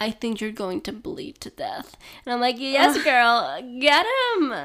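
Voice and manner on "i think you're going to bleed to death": put-on Russian accent, quieter. Retelling a woman's reply to a man kneeling before her, Russian accent. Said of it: "And she says in a Russian accent".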